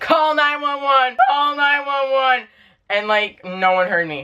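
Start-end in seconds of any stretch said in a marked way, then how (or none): 0.0-2.5 mock screaming, pitched up high. Recounting breaking an arm at night, the speaker re-enacts screaming, retelling own screaming. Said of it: "I started screaming".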